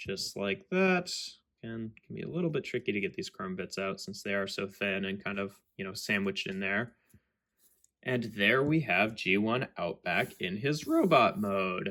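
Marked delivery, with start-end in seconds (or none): 8.0-11.9 voice cracking, slower pace. Presenting a transformed toy in robot mode on video: voice cracking. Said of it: "my voice cracking there".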